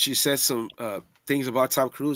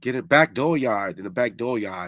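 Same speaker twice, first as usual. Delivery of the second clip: fake Massachusetts accent; 3 semitones lower than usual. Trying out an accent picked up from coworkers: Boston accent. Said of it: "Massachusetts, Boston, and I, it kinda would stick on me".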